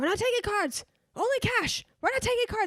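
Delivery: very high, shrill, insistent yelling. Retelling what a store clerk said at the card reader: imitating someone yelling. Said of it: "yelled at me".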